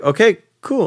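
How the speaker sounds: high, bright, eager okay cool.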